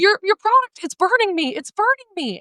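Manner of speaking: put-on very high crying, hysterical screaming panic. Retelling a woman's phone call asking for help: imitating hysterical crying and screaming. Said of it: "crying and screaming hysterically".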